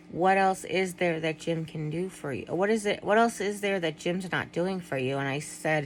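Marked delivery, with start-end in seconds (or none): none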